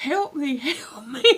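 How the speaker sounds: frantic, panicked screaming kept small and quiet. Retelling how he screamed for help as water spewed everywhere, retelling a panicked scream. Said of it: "And he's screaming".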